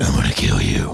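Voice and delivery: very low, rough, brutal gorilla-like growl. Trying the diaphragm voice after being shown how, brutal voice. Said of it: "It sounds brutal".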